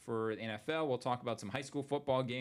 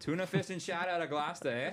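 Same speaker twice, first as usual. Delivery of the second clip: put-on Boston-accented voice; 6 semitones higher than usual. Chatting with another speaker, repeating a phrase in a boston accent. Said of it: "with a Boston accent".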